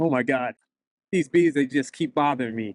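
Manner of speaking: usual speaking voice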